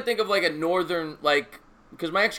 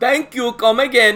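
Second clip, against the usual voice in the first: loud, booming, high, exaggerated put-on Pakistani accent; 6 semitones higher, 9 dB louder than usual. Showing off an accent the speaker claims to do very well, as a store owner, in a put-on Pakistani accent. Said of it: "Simpsons, right?".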